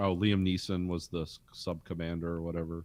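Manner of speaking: ordinary talk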